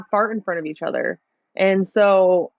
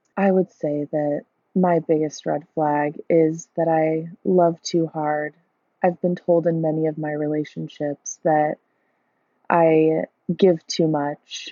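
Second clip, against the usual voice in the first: put-on mournful, hushed, low, soft melancholy voice; 3 semitones lower than usual. Imitating a dating-profile voice memo on red flags: imitating a low melancholy soft voice. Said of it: "this low melancholy, s-, like, soft voice".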